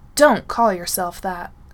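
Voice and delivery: very loud, sharp, steely snapping voice. Reading a story, Styles answers Derek, snapping in a steely voice. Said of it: "he snaps, his voice coming out completely, perfectly, steely".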